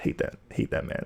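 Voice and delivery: hushed, soft, grudging whisper, breathed out.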